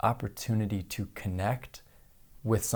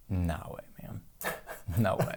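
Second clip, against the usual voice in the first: mock defiant, slow, breathy whispered tough-guy voice; 2 semitones lower, 4 dB quieter than usual. Retelling a resistant participant's reply: imitating a tough guy attitude. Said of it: "he had a real tough guy attitude".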